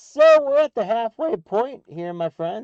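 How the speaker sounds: voice cracking. Host announcing the halfway point to his audience, voice cracking. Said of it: "my voice cracks for some reason".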